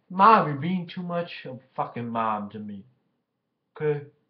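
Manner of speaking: very loud, furious yelling. Addressing mom after her text: angry. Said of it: "Which makes me pissed off".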